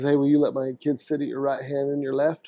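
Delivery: normal talking voice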